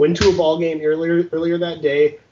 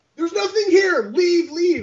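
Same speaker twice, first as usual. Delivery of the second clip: imitated yelling, higher. Retelling how Gavin yelled at an intruder in his house: imitating someone yelling. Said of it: "he starts yelling at him".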